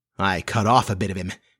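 ordinary delivery

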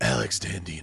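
deep, low, raspy, rasping smoker-like voice. A podcast co-host is introduced and gives a name in a Kathleen Turner voice. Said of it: "let me do my Kathleen turn voice".

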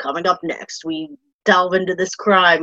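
murder-mystery narrator voice. Describing a former host's voice work, imitating Peter's narrator voice. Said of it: "he's got one of those voices that's just".

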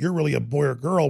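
ordinary talk

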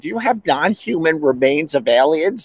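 normal talking voice

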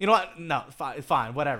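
loud, irritated, dismissive, giving-up tone. Retelling a food argument with a chef partner: imitating own mad reply. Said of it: "I just got so mad. I was just like".

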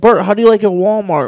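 plain

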